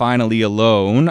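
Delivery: normal talking voice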